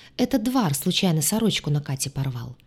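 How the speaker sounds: ordinary delivery, nothing marked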